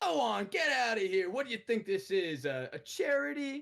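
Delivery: very high, angry, scornful yelling. Game master voicing a crowd of merchants at the player: merchants yelling. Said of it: "Now they're all yelling at you".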